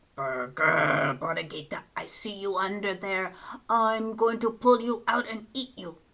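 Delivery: growling coyote voice, predatory. Narrator reading the coyote finding the lamb hiding, growling coyote. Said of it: "he growled".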